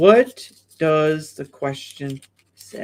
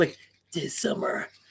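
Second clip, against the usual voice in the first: put-on old trailer announcer voice, much quieter; 10 dB quieter than usual. Describing old movie trailers, the speaker does an old movie trailer voice. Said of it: "like the old trailers voices".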